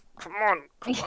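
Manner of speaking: hushed whisper. Playing a character urging someone on so others can't hear, whispering. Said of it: "He's whispering like".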